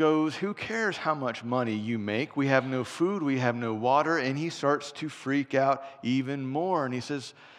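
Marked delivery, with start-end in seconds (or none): none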